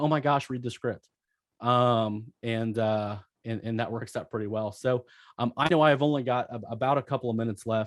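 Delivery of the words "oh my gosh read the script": put-on fake freak-out, panicky. Retelling own reply to a presiding officer: imitating own fake freak-out. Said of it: "I just kind of fake freak out and say".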